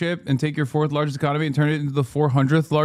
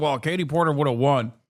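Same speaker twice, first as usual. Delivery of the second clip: scornful, derisive parody of a commentator's voice. Mocking a claim that Katie Porter would have won: mocking imitation of the pundit. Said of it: "and you're over here being like".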